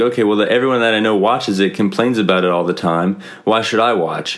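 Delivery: normal talking voice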